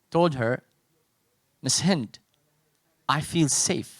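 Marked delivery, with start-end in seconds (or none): 1.6-3.8 hushed, very soft voice. Retelling a twelve-year-old student telling her teacher: very soft voice. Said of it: "in a very soft voice".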